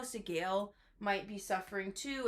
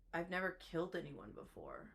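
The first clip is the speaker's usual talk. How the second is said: hushed, confiding, secretive whisper; 4 semitones lower, 8 dB quieter than usual. Speaker recounts what a woman admitted, retelling a whispered secret. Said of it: "she like whispers it almost like a secret".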